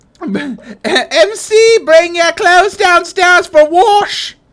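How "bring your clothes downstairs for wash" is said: put-on English nanny voice, much higher pitch. Imitating Milby, who shouts at the other speaker, Milby as English nanny. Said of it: "becomes like an English nanny".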